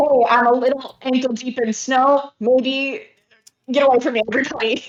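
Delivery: high, loud shouting voice. Speaking as Agatha to everybody around her in the fight, shouting. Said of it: "Agatha then shouts".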